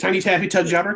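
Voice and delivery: botched, tangling, stumbling words. Trying the tongue twister quickly after asking for it five times fast. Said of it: "Say that five times fast".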